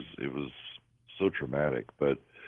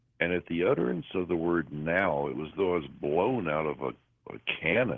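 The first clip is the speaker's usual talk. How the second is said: usual speaking voice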